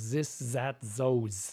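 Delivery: over-the-top, exaggerated, comic put-on German accent. Showing how people do German accents: exaggerated German accent. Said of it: "people doing German accents are often going".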